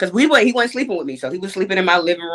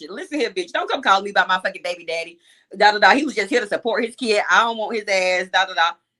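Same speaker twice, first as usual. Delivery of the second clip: ordinary talk, nothing marked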